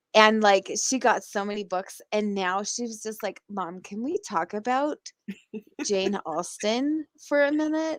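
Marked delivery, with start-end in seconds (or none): 3.5-8.0 put-on valley girl voice. Mother quoting her fifteen-year-old daughter, valley girl imitation of daughter. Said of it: "I imitate her like a valley girl".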